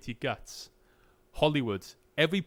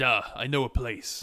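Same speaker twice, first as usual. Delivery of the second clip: put-on deep, very slow character drawl; 4 semitones lower than usual. Impersonating a character's line on purpose, in a put-on deep character voice. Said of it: "saying it in a deep voice on purpose? ... I'm trying to impersonate the character".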